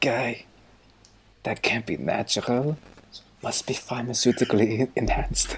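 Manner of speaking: stage whisper. Player in a game remarking on a guy nearby: stage whisper. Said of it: "I'm actively trying to like whisper".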